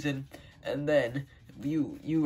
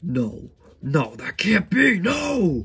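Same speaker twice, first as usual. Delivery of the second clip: very loud, slow, swooping, enraged furious outburst; 4 semitones higher, 10 dB louder than usual. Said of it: "why is he so mad?".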